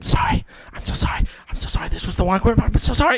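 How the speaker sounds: soft, hushed, barely voiced stage whisper. Player describes backing away from a sleeping dragon, whispering. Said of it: "just whispering".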